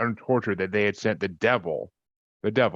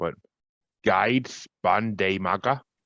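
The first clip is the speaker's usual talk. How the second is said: fake German pronunciation. Telling of the earliest recorded witch accusation, saying the woman's name in german accent. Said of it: "Do my German accent there".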